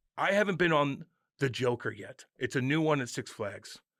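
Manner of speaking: ordinary delivery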